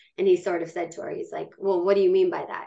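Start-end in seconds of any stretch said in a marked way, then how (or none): 1.6-2.7 put-on accusing voice. Retelling how a date questioned a client: imitating an accusatory question. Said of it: "Kind of accusatory".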